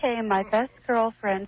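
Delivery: very high, put-on girly voice. Prompted by the others, starting a role-played story in a girl voice. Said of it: "Talk in your girl voice".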